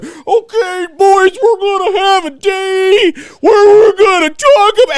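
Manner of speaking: very high, loud shout, "day" dragged out. Retelling a woman talking to the boys, speaker does a Chris Farley Matt Foley impression. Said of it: "It sounded like Chris Farley from uh".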